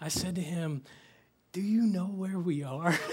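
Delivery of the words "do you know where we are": weak, drained, feeble, barely-there voice. Retelling waking up dazed beside another leader: imitating a barely-there weak voice. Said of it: "with all the energy I could muster".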